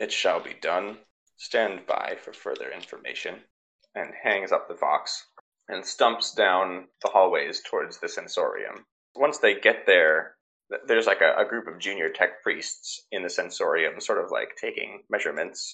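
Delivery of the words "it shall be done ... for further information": cold, metallic, soft synthesized machine voice. Storyteller voices the Mechanicus person replying over the Vox, cold, metallic synthesized voice. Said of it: "in their cold, metallic, synthesized voice".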